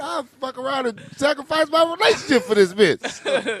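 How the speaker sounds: amazed, laughing, high-pitched. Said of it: "I looked at the picture like".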